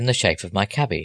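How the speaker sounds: usual speaking voice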